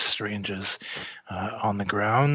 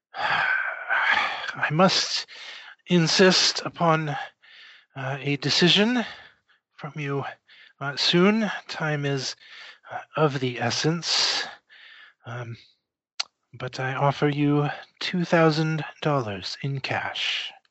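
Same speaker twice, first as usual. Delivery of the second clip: wheezing, labored breath, much higher pitch; 4 semitones higher than usual. A man presses visitors for a decision, wheezing and short of breath. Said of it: "acquiring the distillery, / He kind of wheezes and coughs for a moment. / I was born in 1862 in northern Quebec. / He is coughing and clearly is having some trouble breathing. / I wish to ask for your".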